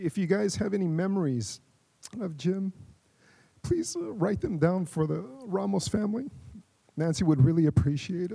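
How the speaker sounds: speaking through tears. Addressing guests at a celebration of life, tearful. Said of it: "So sorry for the tears".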